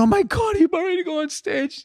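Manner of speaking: very high, giggling laugh-crying through tears. Retelling what she said as he was about to go on stage, imitating laughing while crying. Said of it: "And she started laughing".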